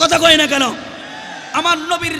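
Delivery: high, loud angry preaching outburst.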